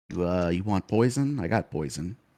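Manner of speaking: slightly hushed stage whisper. Voicing a character who leans in and holds up a hand, pretend half-whisper. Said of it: "pretend like he's whispering at you, but he's just talking slightly quieter".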